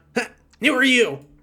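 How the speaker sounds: high, small cave-creature voice. Voicing a kobold who orders others to send a platter: kobold voice. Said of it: "kobold turns around".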